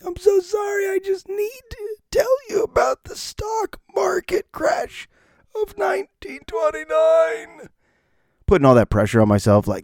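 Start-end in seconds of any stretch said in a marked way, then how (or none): 0.0-7.7 very high, barely-there lost-voice speech. Retelling teaching students after losing the voice: imitating own lost voice. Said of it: "That's how I sounded for three days".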